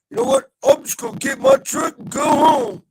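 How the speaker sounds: shrill, high, loud, angry Southern drawl. Retelling an angry guy from the Panhandle leaving: imitating a pissed-off southern drawl. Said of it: "these guys had a draw".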